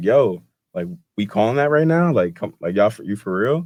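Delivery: mild, restrained protesting yell. Retelling a coach yelling at the ref: imitating Todd Golden yelling. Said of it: "he was yelling at the ref".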